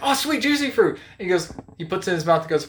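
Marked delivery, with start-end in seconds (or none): 0.0-1.0 very high, thrilled, excited cartoon voice. Retelling a cartoon gag about Juicy Fruit: excited Peter Griffin voice. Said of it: "really excited about Juicy Fruit".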